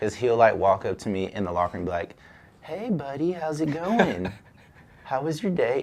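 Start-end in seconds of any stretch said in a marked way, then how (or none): 2.6-5.8 super concerned, mock, friendly, maybe sarcastic. Quoting how he walks up to you in the locker room, imitating someone super concerned. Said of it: "he seems like he's super concerned about you".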